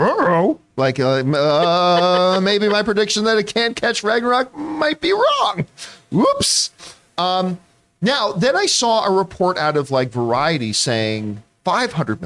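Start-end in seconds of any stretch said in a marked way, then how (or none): 0.0-6.7 bad, pitched-up cartoon dog voice, drawn-out uh. Retelling his reaction to a box-office report: bad Scooby-Doo impression. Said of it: "in a very bad Scooby Doo impression".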